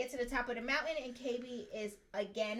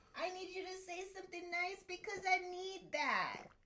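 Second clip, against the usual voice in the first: mock whiny, pained baby voice, higher; 7 semitones higher than usual. Retelling his request to hear something nice, imitating a whiny, pained voice. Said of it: "sound like he's in excruciating pain".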